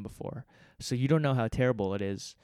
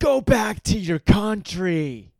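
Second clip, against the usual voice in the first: high, booming, very loud, very slow shout; 7 semitones higher, 8 dB louder than usual. Retelling a homeless man shouting at him and a friend on the street, retelling a shout. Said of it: "This homeless dude just shouts at us".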